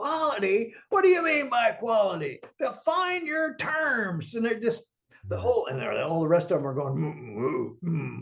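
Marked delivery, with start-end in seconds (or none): 0.0-4.3 mock-screaming, much higher. Recounting a man in a conference room who jumped up at them, retelling a scream. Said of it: "literally screaming".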